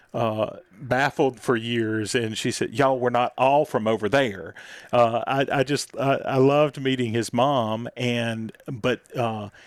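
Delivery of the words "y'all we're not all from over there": put-on Southern Mississippi Delta accent. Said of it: "this voice that she has".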